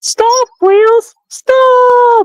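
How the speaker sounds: very high cartoon engine voice, stop stretched out. Asked for his Thomas voice, the speaker does it: Thomas voice. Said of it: "Your Thomas voice".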